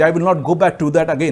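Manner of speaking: ordinary delivery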